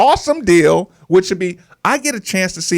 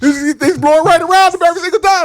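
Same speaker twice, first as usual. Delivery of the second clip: mock angry complaining voice, higher pitched; 11 semitones higher, 4 dB louder than usual. Retelling how the other speaker complains when the team is losing: imitating Steve angry at the coach. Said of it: "now you hate the coach, and now you're saying".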